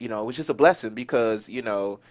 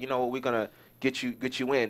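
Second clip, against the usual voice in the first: ordinary talk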